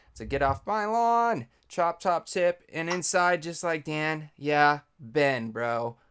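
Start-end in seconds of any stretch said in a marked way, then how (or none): 0.3-1.5 very high, shrill, drawn-out shout. Giving a Chop Top tip, the speaker says the phrase: yelled. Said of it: "You got to yell it when you say it".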